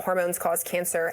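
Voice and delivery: ordinary delivery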